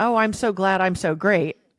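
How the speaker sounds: usual speaking voice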